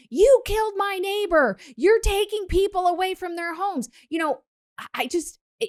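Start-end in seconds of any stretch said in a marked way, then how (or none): 0.1-3.9 raised, high screaming in a put-on woman's voice. Retelling what a woman at a scene said: imitating a woman screaming. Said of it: "the woman was screaming".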